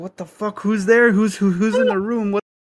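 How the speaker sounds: high, frightened, spooked, stumbling outburst. Retelling hearing a voice on a record at night: retelling own scared reaction. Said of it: "I got chills".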